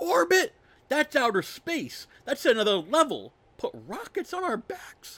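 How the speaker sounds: high-pitched yelling. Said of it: "to which Roman yells".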